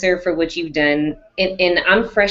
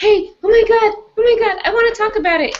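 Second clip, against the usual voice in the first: very high, squealing, excited gushing in a rush. Speaker apologizing for messaging people, acting out how she gets: mock-excited emotional gushing. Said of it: "I get emotional and I like message people".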